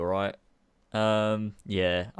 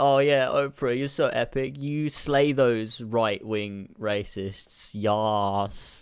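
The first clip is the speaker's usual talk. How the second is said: ordinary talk, nothing marked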